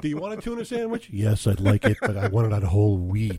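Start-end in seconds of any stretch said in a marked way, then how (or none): 1.1-3.4 low, sinister, evil villain voice. Showing how he always talks during filming, in his evil voice. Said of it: "I'm always talking in my evil voice".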